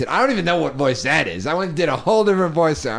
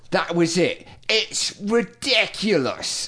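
clumsy, bad put-on woman's voice; 4 semitones higher than usual. Speaker quotes what Naomi said, bad Naomi voice. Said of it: "That was a bad voice".

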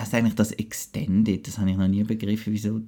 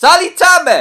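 loud voice, higher pitched and louder; 13 dB louder than usual. Greeting everyone during a microphone check: loud greeting. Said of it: "nicht so laut, Mann".

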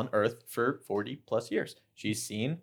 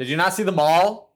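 heated shouting, higher and louder; 7 semitones higher, 10 dB louder than usual. Arguing with a friend about a show's setting: yelling in a heated argument. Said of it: "I'm yelling, aren't I?".

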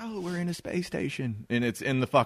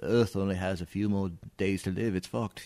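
deep, dropped movie-actor film-star voice; 4 semitones lower, 7 dB quieter than usual. Retelling a film scene, quoting the head scientist: Michael Caine impersonation. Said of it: "That's my Michael Caine impersonation".

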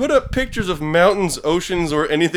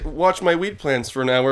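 ordinary talk, nothing marked

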